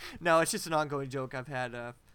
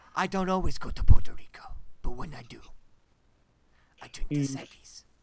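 very loud, booming, breathy commercial pitchman voiceover; 8 dB louder than usual. Parodying the line after comparing a voice to the Dos Equis guy. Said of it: "he sounded like the Dos Equis guy".

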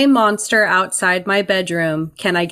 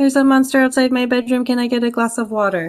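put-on emotionless, flat, slightly high, all in one breath; 6 semitones higher than usual. Retelling how a player said her line: imitating Laura's flat voice. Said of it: "with nothing in her voice".

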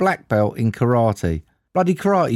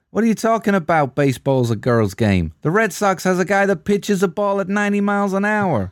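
bad, fake American accent, pitched up; 7 semitones higher than usual. Acting out a quote after asking how to do one: put-on american accent. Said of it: "imagine this in an American accent then".

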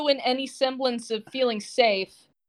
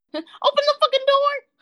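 put-on shout, much higher and louder; 5 dB louder than usual. Repeating another person's yell at a door; imitating a high-pitched shout. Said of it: "That was way too high-pitched".

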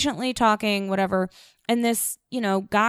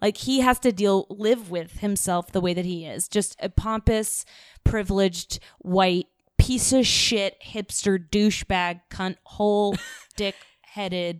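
ordinary talk

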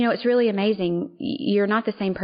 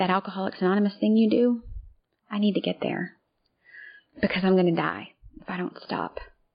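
mock tearful crying whisper. Retelling a phone call from someone asking for help: imitating a crying whisper. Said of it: "he was crying and he was whispering".

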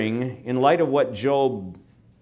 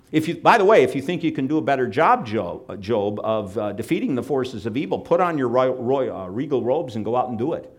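ordinary talk

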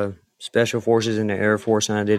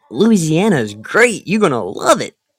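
fake perky cheer in a peppy, high sing-song voice; 7 semitones higher, 6 dB louder than usual. Talking up a trip to louisiana, the speaker switches to a put-on peppy voice. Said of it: "With that peppy voice".

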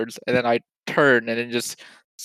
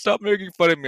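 put-on tearful little kid bawling, pitched up; 7 semitones higher, 3 dB quieter than usual. Retelling what a little kid said after hitting a glass door: imitating a crying kid. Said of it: "he starts, like, crying".

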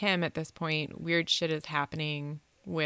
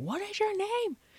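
frantic, shrill, shrieking scream, very high. Retelling a creature's demand at a door: imitating a creature screaming. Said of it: "sitting there screaming at him, like".

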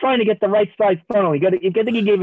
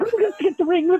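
put-on creature whimper, much higher pitch; 11 semitones higher than usual. Retelling how Ernie cowered rolled up in a ball, imitating Gollum whimpering. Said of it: "whimpering like he's like Gollum".

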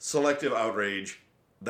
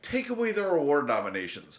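normal talking voice

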